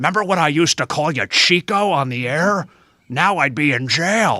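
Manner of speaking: very loud, intense, imposing booming voice. Retelling the governor greeting Tito Santana: Jesse Ventura impression. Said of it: "Such a good impersonation".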